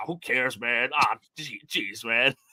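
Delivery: deep, very low, soft, muttered put-on grumpy grumble. Joking about how they both sound when grumpy: put-on grumpy voice. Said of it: "whenever we get grumpy, we're just like".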